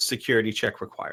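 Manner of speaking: ordinary talk, nothing marked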